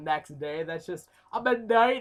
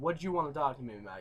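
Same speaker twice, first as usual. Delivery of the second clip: acted quick, quiet, rude, impolite tone; 3 semitones lower, 8 dB quieter than usual. Retelling going up to a cousin the next day, retelling in a rude tone. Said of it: "I'm using kind of a rude tone of voice".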